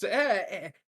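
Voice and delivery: scolding schoolteacher "eh, eh, eh" noises. Acting out a character wagging a finger: schoolteacher's scolding noise. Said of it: "the noise that elementary school, school teachers do".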